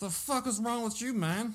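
very high blown-up outburst, voice shooting up. Retelling a coach yelling at players: Al Pacino Scarface voice. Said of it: "he broke into a little bit of, uh, Scarface with that one".

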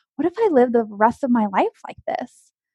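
ordinary talk

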